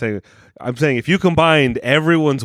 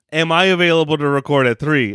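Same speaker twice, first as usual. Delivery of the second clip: ordinary talk, nothing marked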